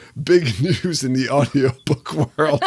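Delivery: laughing while talking. Repeating another speaker's line after failing to hold in laughter: laughing while talking. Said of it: "I just couldn't hold it in".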